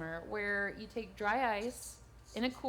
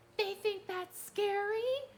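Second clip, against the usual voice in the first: put-on very high small child's little boy voice; 11 semitones higher than usual. Recounting a group of kids overheard while playing music, in a little boy voice. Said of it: "we hear this little boy voice go".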